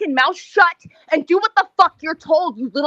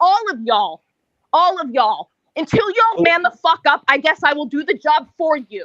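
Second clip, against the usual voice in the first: emphatic, forceful, hard-hitting delivery. Telling the panel they allow bigotry: emphatic. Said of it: "Tsunami was rather emphatic".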